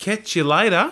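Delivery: put-on Australian accent. Asked how to say goodbye in Australian, answering in an Australian accent. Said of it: "We're all just saying goodbyes in an Australian accent".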